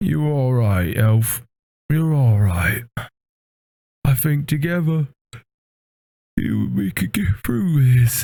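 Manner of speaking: huge beast creature character voice. Voicing a big creature who looks at the elf: large beast character voice. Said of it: "pats you on the head and he's like".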